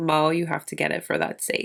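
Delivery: ordinary delivery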